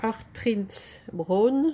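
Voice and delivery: slow, careful, French-accented English.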